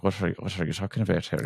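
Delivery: imitated Irish accent. Discussing how Irish people talk, the speaker demonstrates an Irish accent. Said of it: "I Irish, they don't move their their top lip at all".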